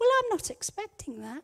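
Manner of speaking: gentle and pleasant, soft and kept low-key. Retelling their own reply to an awful forecast, retelling saying it quietly. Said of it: "quietly but nicely, with a big smile on my face".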